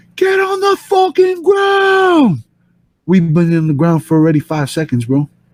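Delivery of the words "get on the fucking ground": mock, very high screaming. Retelling a man kneeling on him and screaming, retelling a scream. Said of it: "he's screaming at me".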